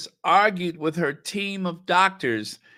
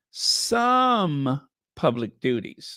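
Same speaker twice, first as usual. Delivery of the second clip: heavy stress, "some" drawn out slowly. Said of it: "let me stress it".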